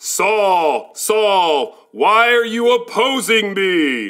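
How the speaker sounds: voice echoing all around, from everywhere. In a Bible skit, a voice speaks to Saul from everywhere: voice from everywhere. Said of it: "heard a voice come from everywhere that said".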